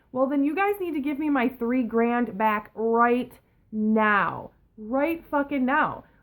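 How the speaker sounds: put-on pissed-off angry voice, "now" drawn out. Retelling a phone call demanding money back: imitating an angry demand. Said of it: "I'm pissed".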